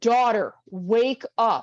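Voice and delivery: firm, stern, commanding voice. Recounting a voice calling the speaker to wake up a second time: retelling a stern voice. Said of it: "in a more stern voice".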